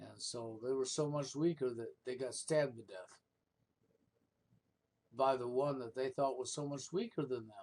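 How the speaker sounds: biting, sarcastic, mocking delivery. Commenting on men killed by a woman they thought weaker: sarcastic. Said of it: "I know I'm being sarcastic here".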